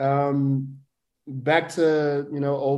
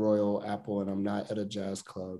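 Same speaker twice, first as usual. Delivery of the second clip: ordinary talk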